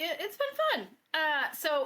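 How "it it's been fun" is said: very high head voice, falsetto. A guest answering the host near the end of the interview, in falsetto. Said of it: "You went into your falsetto there".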